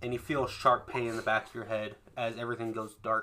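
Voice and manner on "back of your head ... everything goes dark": ordinary talk, nothing marked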